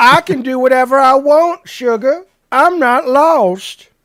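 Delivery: fake Southern drawl, very loud and slow. Quoting a line from a film, done in a put-on Southern accent. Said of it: "but with the southern accent".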